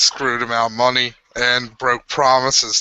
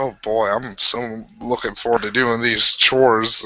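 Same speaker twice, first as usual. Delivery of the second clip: ordinary talk, nothing marked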